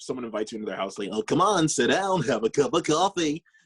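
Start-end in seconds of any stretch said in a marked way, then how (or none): 1.1-3.4 soothing, calm voice pitched up. Describing a puppeteer's Barney, the speaker imitates a host inviting you in: soothing Barney voice. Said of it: "Dean's Barney is just like very like soothing".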